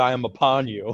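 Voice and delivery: all-out screaming. Retelling pinning down a friend who had a sword: retelling a scream. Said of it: "And I just screamed".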